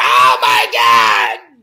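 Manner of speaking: shrieking scream at full voice, very loud. Retelling answering telemarketer calls: imitating own screaming. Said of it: "I'd answer the phone screaming".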